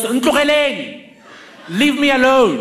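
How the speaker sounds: high, loud swooping yell. A speaker retells a woman yelling from the window at a car: retelling her yell. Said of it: "and yells".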